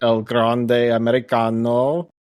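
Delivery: Italian-accented speech. Listing the wrestlers in a Money in the Bank match, saying a name in an Italian accent. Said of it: "say it with an Italian accent?".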